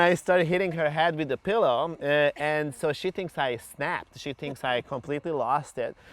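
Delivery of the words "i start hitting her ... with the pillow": usual speaking voice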